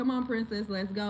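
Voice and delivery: ordinary talk, nothing marked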